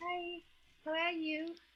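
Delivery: really soft-spoken, high little voice. Showing how they used to talk when greeting someone, really soft voice. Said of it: "I used to talk really soft, like it, like I was".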